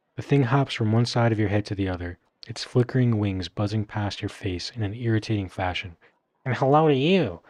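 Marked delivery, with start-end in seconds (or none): 6.4-7.3 high, loud, chirpy creature voice. Narrating a second-person story, the storyteller voices a creature greeting the listener: chirping creature voice. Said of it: "the creature replies, chirping".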